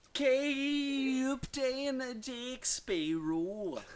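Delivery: put-on mystic sea-witch voice. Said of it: "I do the Calypso voice".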